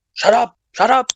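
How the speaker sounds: mock full-blown, very high shouting outburst. Recounting yelling at a man who talks over people: retelling a full yell. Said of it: "I was full yelling".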